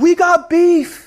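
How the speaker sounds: mock shouted call, pitched very high. Retelling calling across a party to a friend: retelling own yell. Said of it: "and I yelled to him".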